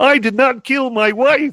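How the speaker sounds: very high, very slow, drawn-out frog puppet voice. Joking about recasting The Fugitive, in a Kermit the Frog voice. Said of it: "I got to get to my Kermit the Frog voice".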